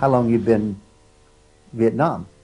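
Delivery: loud, halting broken English. Retelling a man who stopped him on the street: imitating broken English. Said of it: "in broken English".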